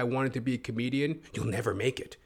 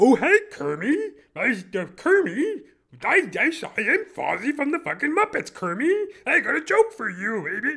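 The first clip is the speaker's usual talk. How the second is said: very high pitch, loud and slow; 12 semitones higher, 7 dB louder than usual. Remembering being told to be a comedian, doing Fozzie Bear voice. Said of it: "I can't even remember how he sounds".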